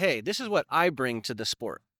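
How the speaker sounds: ordinary talk, nothing marked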